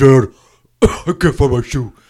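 put-on deep booming voice. Imitating an imagined giant son who talks like Tony Robbins. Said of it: "they talk like that Christopher Robbins guy, Tony Robbins".

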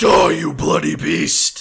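very loud, booming, roaring, drawn-out battle scream. Attacking a monster with a mace in the game: screaming a battle cry.

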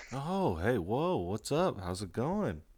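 very hushed, soft, drawn-out, caught-off-guard surprised voice. Greeting another speaker who finally answers a call, sounding surprised. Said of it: "You sound so surprised".

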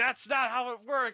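high, loud, angry complaining yell.

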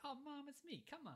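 put-on very high, breezy, would-be-cool kid voice. Retelling a movie scene where the kid answers his mom: imitating a kid acting cool. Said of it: "He's trying to be all cool".

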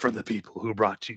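dramatic movie trailer announcer delivery. Pitching a movie trailer, the speaker slips into a Batman voice. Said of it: "movie announcer guy".

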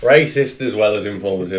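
ordinary delivery

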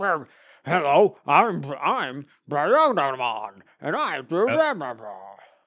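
bad dub voice, overacted, slow, pitch swooping. Imitating the voices done for Digimon creatures: bad Digimon dub voice. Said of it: "really, really bad".

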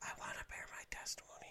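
hushed, very quiet whisper. Describing kids' testimonies, speaker imitates a mom whispering into her child's ear. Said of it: "mom whispering in the ear of the little kid".

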